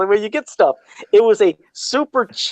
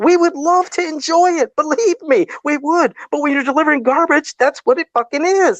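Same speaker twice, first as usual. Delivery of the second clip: worked up, agitated; 8 semitones higher than usual. Ranting on a show with co-hosts, worked up. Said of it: "I'm getting all worked up now".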